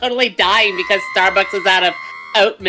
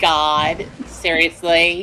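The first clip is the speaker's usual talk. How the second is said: mock put-on Valley Girl accent; 3 semitones lower than usual. Showing what a Valley Girl sounds like, in a Valley Girl voice. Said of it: "like Valley Girl, it sounds like this".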